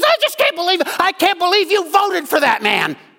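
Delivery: very high, shrill, swooping, enraged yell. Telling a story of a woman throwing groceries at a man over his vote: imitating a woman yelling. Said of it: "She just starts yelling at him".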